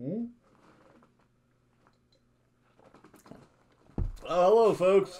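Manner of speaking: talking with mouth full. Speaker greeting viewers while eating, talking with mouth full. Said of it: "I'm eating with my mouth full".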